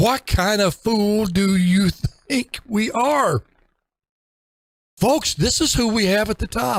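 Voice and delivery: voice leaping up octaves, high-pitched. Criticizing the leadership at the top, high-pitched voice. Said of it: "Why is my voice going up two or three octaves".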